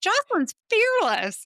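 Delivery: high, loud, incredulous exclamation.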